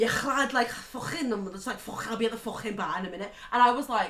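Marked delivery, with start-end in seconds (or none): 0.0-3.3 put-on heavy, broad, thick Scouse accent, laid on. Speaker retelling a man on the phone in a hotel lift, thick Liverpool accent. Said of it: "the thickest Liverpool accent I've ever heard".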